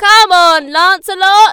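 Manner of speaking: very loud, high cheering shout. Lancelot's dad calls to him as the Red Knight charges, shouted. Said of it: "his dad shouted".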